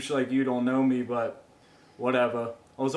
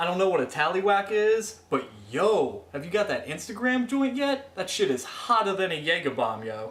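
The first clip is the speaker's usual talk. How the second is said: bad, terrible fake Jersey accent, pitched up; 5 semitones higher than usual. Caller who wants to be from jersey answering the hosts, terrible jersey accent. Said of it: "What's with the terrible accent".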